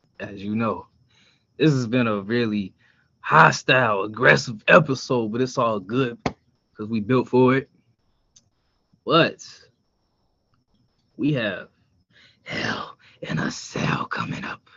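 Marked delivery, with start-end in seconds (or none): 9.0-14.6 cranky, irritable host-style voice. Announcing a coming event to the show's listeners in a cranky Vince McMahon voice. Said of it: "I'm trying to give you my Vince McMahon voice so I can sound like I'm cranky".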